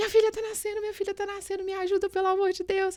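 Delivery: put-on, piercing, very high-pitched, shrill yell. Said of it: "eu comecei a gritar".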